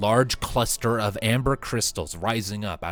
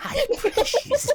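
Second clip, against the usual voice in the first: very high, failed, botched voice attempt; 3 dB louder than usual. Trying a Gollum line after players mention him: bad Gollum impression. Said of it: "I can't do Gollum".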